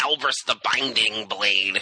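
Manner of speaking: geeky, nerd-style delivery. Introducing a weird card by its name, in a nerdy voice. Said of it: "you have to say it in a nerdy kind of voice".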